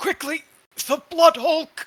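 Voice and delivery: very high, halting straining voice. Forced to his knees, Bazbeer calls out to the others: halting, struggling voice. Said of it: "in like a halted, like struggling voice just says".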